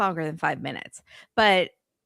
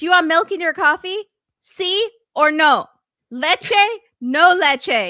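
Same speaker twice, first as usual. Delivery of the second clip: very high, very loud, shrill scream; 9 semitones higher, 8 dB louder than usual. Retelling how a woman screamed at a man: imitating her screaming. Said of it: "then she's screaming at him".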